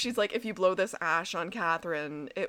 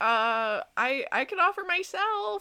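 put-on teenager voice, pitched much higher; 10 semitones higher than usual. Retelling what Jeremy said, Jeremy in a 16-year-old voice. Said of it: "I'm just doing like a little like 16-year-old voice".

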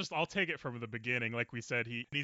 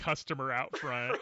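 ordinary talk, nothing marked

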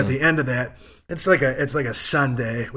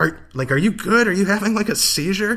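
mock-panicked, anxious tone, pitched much higher than normal; 7 semitones higher than usual. Retelling how a woman and the bartender reacted to the speaker, imitating panicked concern. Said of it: "looking kind of panicked".

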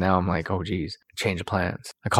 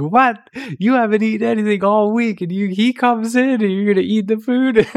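angry, indignant outburst, pitched very high; 4 dB louder than usual. Speaker retells how she reacted when he ate the treats: acting out her anger. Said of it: "she gets all mad".

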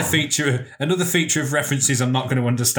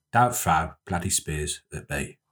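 put-on cockney accent, actor style; 9 semitones lower, 5 dB quieter than usual. Showing another speaker an impression after being urged to go on: Michael Caine impression. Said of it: "I could do, um, what's he called off Italian Job? Michael Caine".

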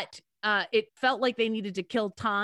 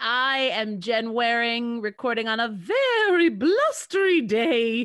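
put-on voice, not the usual one, swooping; 4 dB louder than usual. Podcast host introduces herself at the episode's start in a put-on voice. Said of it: "I'm using that voice as opposed to my own".

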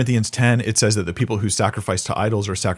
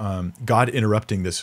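plain

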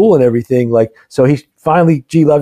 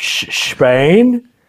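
put-on Scottish accent in a higher voice; 5 semitones higher than usual. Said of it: "Sean Connery sh-".

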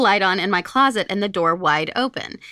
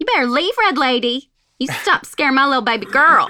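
put-on Natchez accent; 5 semitones higher than usual. Acting out what the listener's mom said to the red lady, Natchez accent. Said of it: "There's the Natchez accent".

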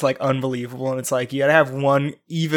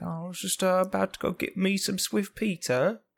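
higher-pitched mock sixties British voice. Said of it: "that sounds so British".

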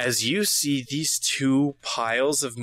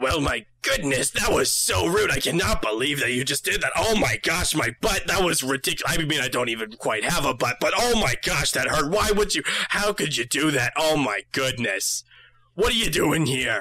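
voice of a many-eyed tentacle creature. Voicing a screaming eye creature speaking into the players' minds: tentacled eye monster voice. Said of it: "you all hear this".

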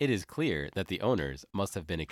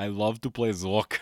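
weird put-on Austrian accent, louder; 4 dB louder than usual. Saying a line while playing Zork with others: Arnold Schwarzenegger voice. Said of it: "This weird Austrian accent".

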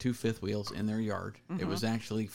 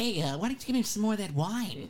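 very high, loud, swooping, sing-song cartoon voice; 12 semitones higher, 5 dB louder than usual. Ask someone to give you more wine in a Bugs Bunny voice. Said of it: "You sound like Bugs Bunny".

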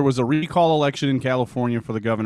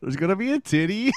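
talking through laughter, pitched up; 9 semitones higher than usual. A speaker recalls a canadian tv show, laughing while speaking. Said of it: "I can't even say it without laughing".

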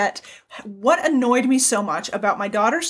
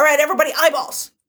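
bossy, demanding, teacher-like tone; 3 semitones higher, 3 dB louder than usual. Imitating the daughter's teacher telling the kids to look at her: imitating a demanding teacher. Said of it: "demands that the kids look at her".

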